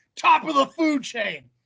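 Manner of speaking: play-acted, berserk, drawn-out, high shouted outburst. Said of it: "I could have sworn he yelled".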